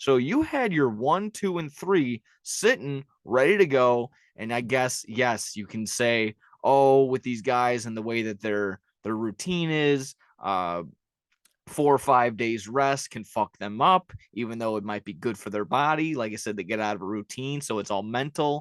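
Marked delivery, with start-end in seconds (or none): none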